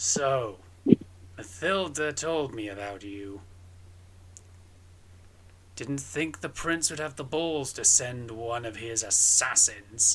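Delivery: gruff, rough-sounding voice. A tall man confronts a stranger found in his car, gruff voice. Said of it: "a bit of a gruff voice to him".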